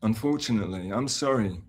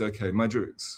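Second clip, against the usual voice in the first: ordinary talk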